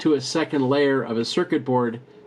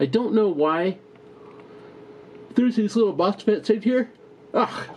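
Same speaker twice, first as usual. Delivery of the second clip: words stretched by a yawn, pitched up; 7 semitones higher than usual. Explaining a datasheet's current-sensing parts, the speaker talks while yawning. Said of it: "excuse me for yawning".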